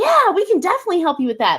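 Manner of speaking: put-on excited, helpful, high sing-song phone voice. Giving feedback on a phone call, quoting the woman on it: imitating her excited tone. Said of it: "That's when we hear the excitement in her voice".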